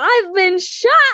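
sudden, high, shrieked screaming outburst. Retelling own reaction during sex, retelling a scream. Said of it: "And I screamed".

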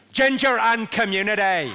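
loud Northern Irish Belfast accent. Teaching the audience an accent, the speaker says the practice phrase in a Belfast accent. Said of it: "the phrase I use to get the Belfast accent right".

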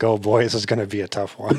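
mock snide, sarcastic tone. Describing a character who makes snide remarks, quoting one: mock-snide remark. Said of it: "He makes snide remarks too".

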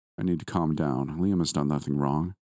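ordinary delivery

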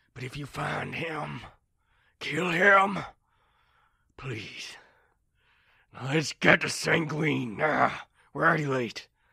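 gruff, worn-out, weary, grudging and vengeful voice. A weary smuggler captain, left with no choice but to calm down, demands that the culprit be killed if found; gruff and booming. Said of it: "a Goliath with scars all over his body, / a Goliath with scars all over his body, / a Goliath with scars all over his body, / But you really need to rest. If you get too exhausted, / Booming, just voi".

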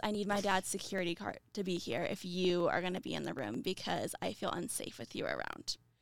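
ordinary talk, nothing marked

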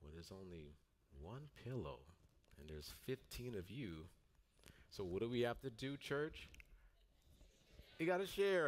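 matter-of-fact, no-nonsense teacher voice. Retelling answering the group who all wanted the pillow, matter-of-fact teacher voice. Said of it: "in the most like matter-of-fact teacher voice I could muster up".

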